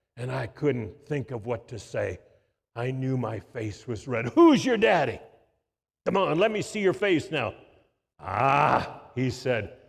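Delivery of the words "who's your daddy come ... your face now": big booming preacher voice, much higher and louder. Retelling a preacher pressing him about his father, in a big booming preacher voice. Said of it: "in his big, booming voice".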